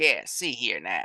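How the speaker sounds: put-on Southern accent. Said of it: "southern accent going".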